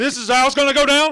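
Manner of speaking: put-on furious shouting. Retelling a diner scene where a coach gets furious: imitating a furious coach. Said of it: "he gets fucking furious".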